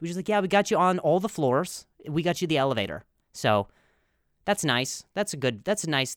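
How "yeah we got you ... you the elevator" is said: ordinary talk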